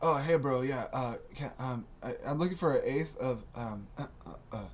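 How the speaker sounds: timid, stumbling, quiet, halting delivery. Acting out buying a strain at a counter, asking quietly. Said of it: "ask for it quietly".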